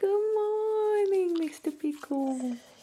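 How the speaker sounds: very high, sweet, cooing voice. Greeting the dog in the morning: dog voice. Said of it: "Sorry for the dog voice".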